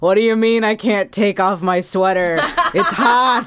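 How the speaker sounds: put-on very drunk, sloppy, slurred voice. Acting out the tape Bart and Milhouse find in The Simpsons, in a very drunk Mr. Rogers voice. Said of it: "the very drunk voice just going".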